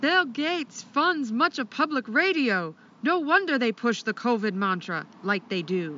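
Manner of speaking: clumsy, bad put-on Maine accent. Reading a listener's comment aloud on request: bad Maine accent. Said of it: "Say it in a Maine accent".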